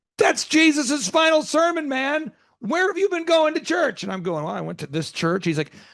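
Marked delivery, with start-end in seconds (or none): 0.2-4.0 put-on frustrated yell, much higher, slower. Retelling what a man said to the speaker about church, imitating his frustrated yelling. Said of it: "he's like yelling like he's so frustrated".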